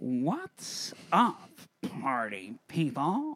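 swooping, confident swagger, owning the room. Performer retakes a greeting, asked for more confidence, confident Jack Nicholson impression. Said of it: "a big air of confidence about you".

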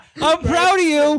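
mock proud tone.

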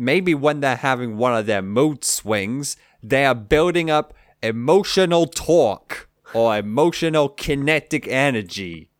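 a touch of Canadian accent. Explaining an idea to the others: slight Canadian accent. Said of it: "I went a bit Canadian there".

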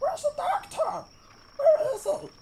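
wild, high-pitched shouting. Narrating a scene, voicing a distant voice asking for the doctor, wild shouting. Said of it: "this voice shouting, wildly saying".

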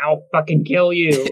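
evil-sounding throaty gurgling voice. Game narrator voicing a wrestling dwarf's threat to a player, gurgling from the neck. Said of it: "like a gurgling from the neck".

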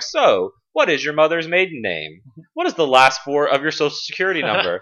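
put-on chirpy automated voice.

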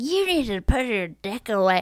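put-on loud drunken yell. Retelling a drunk businessman on a train: imitating a drunk man yelling. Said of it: "yelling at this guy, going".

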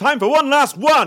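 shouting. Announcing one last contestant: shouting. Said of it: "Why am I shouting?".

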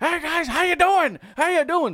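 very high, very loud shouting. Retelling a meeting at a convention: Bob Backlund impression. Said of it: "really good impression of Bob Backlund".

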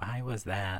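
soft, bemused, puzzled whisper. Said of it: "I was like".

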